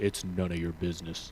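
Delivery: very low, quiet, mean, creepy, menacing voice. Retelling what a guy said from the back of a truck: Batman voice. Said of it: "He sounded like Batman from the Dark Knight movies".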